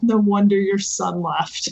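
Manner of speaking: muttered under the breath. Responding to a woman in the scene, mumbled under breath. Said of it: "I mumble under my breath".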